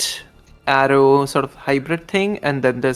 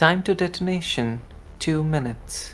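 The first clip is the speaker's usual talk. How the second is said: very calm, composed, quiet voice; 3 semitones higher, 7 dB quieter than usual. Voicing a countdown announcement to the players: very calm, composed voice. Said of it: "In a very calm, composed voice".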